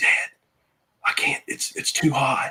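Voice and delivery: soft, breathy whisper under the breath. Retelling what the son said during the hunt: imitating someone whispering. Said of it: "And he's whispering to me".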